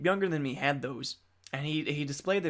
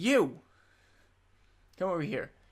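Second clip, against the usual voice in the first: mock angry, furious mother voice; 3 semitones higher than usual. Retelling how a kid's mother called him over: imitating a furious mother. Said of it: "and she is furious".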